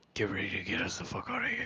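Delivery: half-whispered, barely audible, very quiet. Player character leaning over to a companion, half-whispering. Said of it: "I lean over to Gabriel and whisper".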